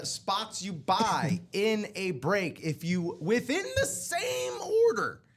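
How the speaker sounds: voice cracking at very high pitch. Host explaining a promotion to listeners, voice cracking. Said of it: "listen to me cracking my voice on this".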